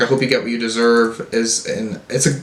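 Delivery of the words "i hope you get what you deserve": ordinary talk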